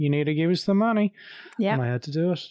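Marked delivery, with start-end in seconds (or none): 0.0-1.1 high, put-on Australian accent. Acting out what he was told about his taxes, in an australian accent. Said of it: "that was me actually doing an Australian accent there".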